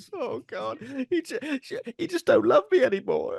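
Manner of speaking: very high, wailing fake sobbing. Voicing an on-screen man likened to a goth after a bad night, mock crying.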